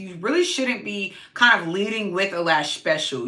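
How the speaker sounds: ordinary delivery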